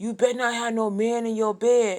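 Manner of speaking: loud yelled, hollering voice. Retelling what he yelled while walking down the hallway: imitating someone yelling. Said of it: "and he's yelling".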